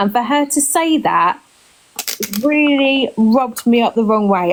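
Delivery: teary voice, close to crying. Ranting about a flippant public comment, close to tears. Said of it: "I'm gonna start crying in a minute".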